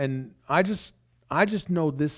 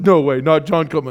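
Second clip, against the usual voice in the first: put-on laughing voice, louder; 8 dB louder than usual. Retelling a friend's reaction to news of a podcast: imitating Cam laughing while talking. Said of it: "he's just laughing like".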